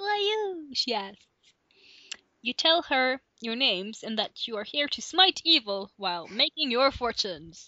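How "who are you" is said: put-on, very high, girlish young girl voice. Narrator voicing a young girl character's question in a story, young girl's voice. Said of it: "I have to do a girl voice now. ... for now she's quite young".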